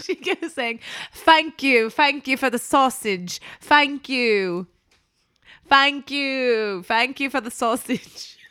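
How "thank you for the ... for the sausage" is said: put-on sharp Cockney accent, higher and louder. Recalling what she kept saying off camera, Sandra Bullock's sharp Cockney bit. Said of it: "sort of like a sharp Cockney kind of a thing".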